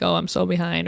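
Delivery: ordinary delivery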